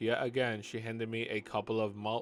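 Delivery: ordinary delivery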